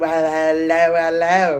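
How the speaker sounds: put-on British accent. Retelling a movie scene: imitating Robert Englund's British accent. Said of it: "British accent in this movie".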